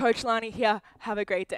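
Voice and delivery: out of breath. Fitness coach signing off at the end of class, out of breath. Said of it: "I'm out of breath".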